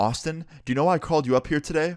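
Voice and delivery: angry demanding tone. Retelling what the principal said in the office: imitating an angry principal. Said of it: "a very angry red face, and he's pissed".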